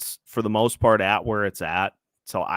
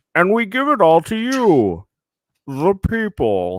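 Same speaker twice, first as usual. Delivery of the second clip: botched villain voice, very high, loud and swooping; 9 semitones higher, 7 dB louder than usual. Giving the people the Bane voice they asked for, in a bad Bane impression. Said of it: "It's just so bad. I'm not good at impressions".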